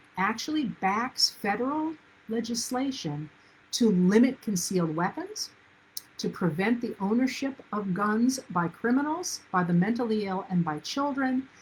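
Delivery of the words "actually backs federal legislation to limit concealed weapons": slow, deliberate delivery. Speaker stressing the NRA's position, slowing down so listeners hear it: speaking slowly. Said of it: "I'm saying this slowly so you hear it".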